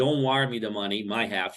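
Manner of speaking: ordinary delivery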